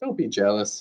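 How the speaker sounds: ordinary delivery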